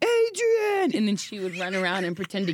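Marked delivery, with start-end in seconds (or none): 0.0-1.0 mock movie-hero yell, pitched way up. Retelling a childhood game on the bed, yelling as Rocky. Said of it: "me jumping on the bed going".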